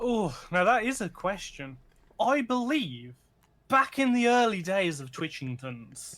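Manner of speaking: fake English accent, switched into. Speaker answers the other speaker's question about going australian; put-on english accent. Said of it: "I've gone all English now".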